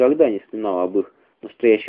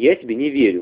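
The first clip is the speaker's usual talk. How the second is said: plain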